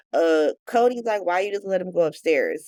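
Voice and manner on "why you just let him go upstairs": normal talking voice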